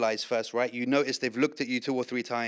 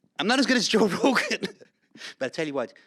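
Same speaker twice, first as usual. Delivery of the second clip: put-on lilting, swooping, animated Irish accent; 8 semitones higher, 5 dB louder than usual. Role-playing an elevator pitch in an irish pub, irish accent. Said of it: "You have to give an elevator pitch in Irish".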